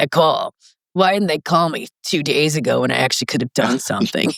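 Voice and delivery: gruff, exasperated, fed-up griping tone. Imitating a nephrologist the speaker worked with, complaining on the unit, gruff voice. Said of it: "he had this really gruff voice, and he'd be like".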